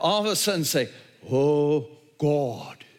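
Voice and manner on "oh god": clumsy, bad put-on British accent. Joking about praying to God in a put-on British accent. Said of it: "you don't have to develop a British accent".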